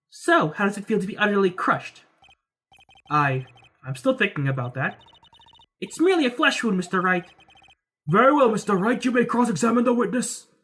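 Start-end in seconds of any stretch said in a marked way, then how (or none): 8.0-10.4 put-on old man voice, higher. Reading game dialogue aloud, voicing a character addressing Mister Wright in an old man voice. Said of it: "Old man voice is so hard to do".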